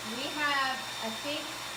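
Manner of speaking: yelling over noise.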